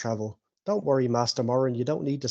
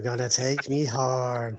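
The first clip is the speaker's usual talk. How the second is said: put-on, mocking sinister tone. Repeating another player's line back to them: imitating a sinister tone. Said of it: "Why did you say that so sinister?".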